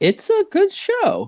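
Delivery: very high-pitched, slow voice. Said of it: "such a high-pitched voice".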